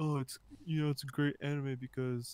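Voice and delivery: mocking put-on voice. Describing how first-time Death Note viewers react, in a put-on voice. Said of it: "I don't know why I'm doing that voice".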